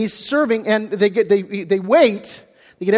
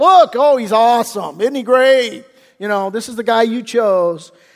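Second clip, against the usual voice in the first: put-on admiring tone with a sarcastic edge; 4 dB louder than usual. Acting out Samuel presenting the chosen king to the people: sarcastic Samuel voice. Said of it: "probably some sarcasm on Samuel's part".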